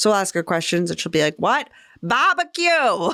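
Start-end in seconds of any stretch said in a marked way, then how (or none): 1.4-3.1 put-on very broad, thick, high Boston accent. Describing a TikTok man's wife answering his questions, in a very Boston accent. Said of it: "her very Boston accent".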